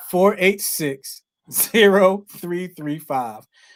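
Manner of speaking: slow, deliberate, unhurried delivery, each part spaced out. Radio host repeating the call-in number for listeners, said a little slow. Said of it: "I'm gonna say it a little slow".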